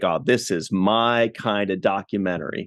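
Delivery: normal talking voice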